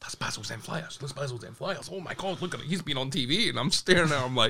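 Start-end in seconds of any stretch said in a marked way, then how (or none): 0.0-3.5 very soft whisper under the breath. Retelling passengers on a plane spotting someone: imitating people whispering.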